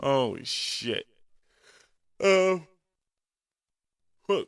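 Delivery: words stretched by a yawn. A podcast host talking solo on his show, yawning. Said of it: "excuse me for yawning".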